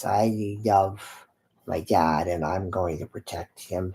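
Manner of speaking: very low, slow dog voice. Speaking for the pet dog Hunter who checks on a guest: voicing the dog. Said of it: "He says".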